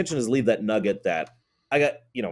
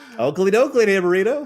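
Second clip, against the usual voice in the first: overly friendly cartoon voice, higher and louder; 10 semitones higher, 6 dB louder than usual. Playing a character who is totally friendly, in a Ned Flanders voice. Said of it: "My demeanor is, is Ned Flanders right now".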